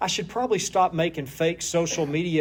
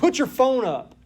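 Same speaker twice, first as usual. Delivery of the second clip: loud, raised, mock angry voice; 8 semitones higher, 5 dB louder than usual. Retelling confronting a kid on a bus, acting out raising his voice. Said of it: "because I'm raising my voice".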